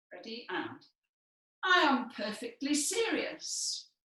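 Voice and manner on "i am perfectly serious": slightly raised, slow, deliberate, pitched-up voice. Showing the class Elizabeth's answer: slightly raised voice. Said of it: "raise her voice a little bit".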